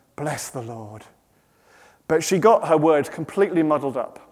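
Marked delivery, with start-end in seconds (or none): 0.2-1.1 very soft, hushed, low, reverent half-whisper. Retelling a worship leader half-whispering into the microphone, imitating a holy half-whisper. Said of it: "in a very godly voice, very holy voice, whisper into the microphone".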